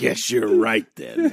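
dripping, aggressive sarcasm with an edge. Conceding a point to the other speaker, in a sarcastic, aggressive tone. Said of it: "your tone is dripping with aggressi- aggression".

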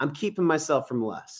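ordinary talk, nothing marked

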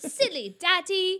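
very loud, high, childlike put-on British accent. A father imitates how his daughter says it in her pretend British accent. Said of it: "She thinks she's British".

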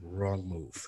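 barely audible, breathy half-whisper. Retelling being choked out in jiu-jitsu: imitating someone half-whispering. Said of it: "Whispered to me".

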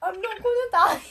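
bad put-on Indian accent. Retelling a character's line from a show: awful Indian accent impression. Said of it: "That was an awful impression!".

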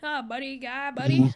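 put-on Canadian accent. Imitating an early voice take in a Canadian accent: Mike Myers Canadian accent. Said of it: "Canadian accent".

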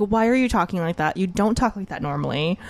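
usual speaking voice

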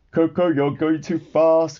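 grumbling. During practice at the training yard, one trainee speaks to another, grumbling. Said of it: "grumbled [name]".

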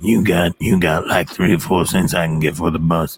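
put-on burnt-out drunk voice, bad impression. Trying out impressions with the other speaker, burnt-out homeless alcoholic voice. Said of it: "burnt out homeless person style alcoholic".

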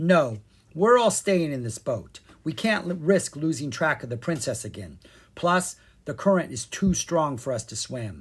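plain

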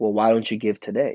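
mock aggressive, pushy, challenging tone. Retelling how a man pressed him to give money: imitating an aggressive demand. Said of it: ""why don't you" in an aggressive sense".

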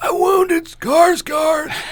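put-on old man voice pitched very high. Asked on a podcast for an impersonation, a co-host delivers the line: Emilio's old man voice. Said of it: "can you do an impersonation of Emilio's old man voice?".

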